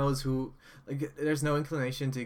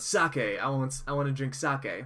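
plain

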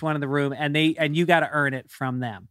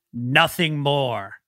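mock macho tough-guy bravado. Comedian retelling a heckler pointing up at him, imitating macho bravado. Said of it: "with all of his Middle Eastern machismo".

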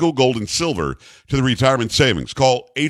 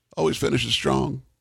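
put-on impersonation, rough and creaky; 6 dB quieter than usual. Attempting an impression after asking whether to: Bill Clinton impression. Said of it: "Can I do a Bill Clinton or not?".

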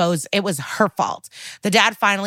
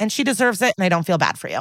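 ordinary delivery

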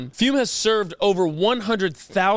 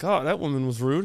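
secretive, hushed, half-whispered stage whisper aside; 6 semitones lower, 4 dB quieter than usual. Retelling what was said to the mom after a woman walked by: retelling a half-whisper. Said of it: "I whisper to the mom".

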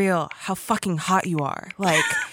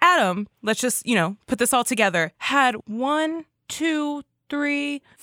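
ordinary talk, nothing marked

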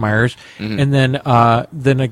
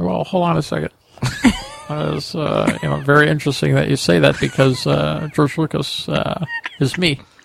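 creaky, halting, hesitant put-on voice; 3 semitones higher than usual. Answering a remark that the speaker sounds like George Lucas: George Lucas impression. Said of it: "it's almost like you're George Lucas".

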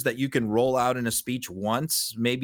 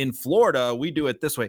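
ordinary talk

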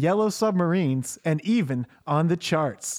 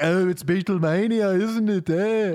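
very slow drawl, each word drawn out; 2 semitones higher than usual. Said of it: "that's what [name] used to say".

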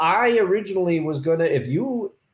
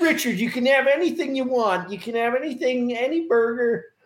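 put-on slight Pittsburgh accent with raised pitch; 6 semitones higher than usual. Imagining what a man would tell someone, the speaker quotes him in slight Pittsburghese accent. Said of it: "like a little accent".

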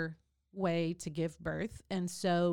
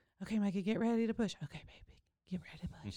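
soft whisper right at the ear; 2 semitones higher, 4 dB quieter than usual. Retelling being coached through a birth: imitating someone whispering. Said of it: "you're whispering every single thing that they're telling me".

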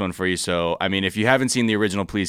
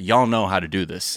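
put-on annoyed politician voice. Retelling a speech where the audience did not clap: imitating annoyed Jeb Bush. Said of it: "he was, like, annoyed".

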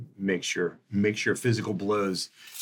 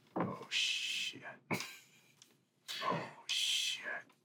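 hushed whispered mumble under the breath. Acting out someone unseen behind the flashlights, muttering.

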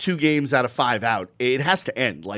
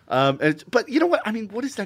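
ordinary talk

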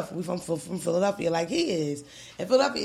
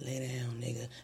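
level, flat, droning, drowsy monotone; 6 semitones lower, 10 dB quieter than usual. Joking about YouTube sleep videos, doing their narration; sleep-video monotone. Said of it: "we already got that monotone where it's like".

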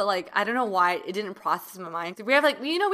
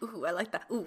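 playful, sassy, flirty "ooh"; 9 dB quieter than usual. Teasing a friend by imitating her talk, imitating Helen's flirty voice. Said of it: "'Cause Helen goes like".

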